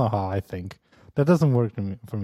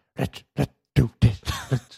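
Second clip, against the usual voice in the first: raspy voice from deep in the throat; 3 semitones higher than usual. Showing a co-host an impression: PewDiePie impression. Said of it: "my PewDiePie impression".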